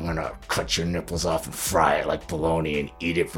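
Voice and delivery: mumbling under breath. Retelling muttering a line during filming: imitating own mumbling under breath. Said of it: "I'm mumbling under my breath".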